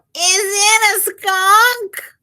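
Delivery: tiny, very high squeaky cub voice. Reading a story aloud, voicing the bear cub: squeaky bear cub voice. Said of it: "squeaked the bear cub".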